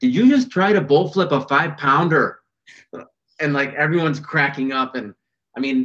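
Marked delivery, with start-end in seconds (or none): 0.0-2.4 put-on Minnesota accent, pitched higher. Retelling a woman's remark on the boat after a snapped line, in a minnesota accent. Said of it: "in her Minnesota accent".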